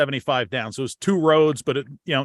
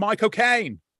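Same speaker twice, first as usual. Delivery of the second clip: put-on high Cockney accent, name squashed together; 5 semitones higher than usual. Retelling reacting when a film with the actor comes on: Michael Caine saying his name. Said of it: "I'm like".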